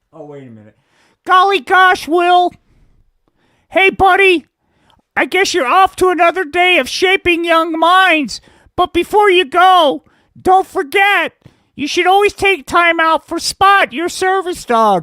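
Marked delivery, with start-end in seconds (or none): 1.2-15.0 very high, loud puppet-show character voice. Hempy the puppet greets his buddy, in the Hempy puppet voice. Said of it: "This is good old [name], man. Before the good folks from the Federal Department of Marijuana, Indoctrination, and Compliance Enforcement decided to pay [name] a visit. And we'll get back to that story because currently [name]'s doing time because you".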